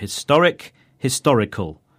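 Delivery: TO stressed the same in historic and historical.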